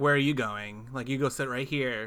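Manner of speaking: put-on teasing tone. Retelling a film scene, quoting a character pushing her onto a lap: imitating a teasing tone. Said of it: "kinda teasing her".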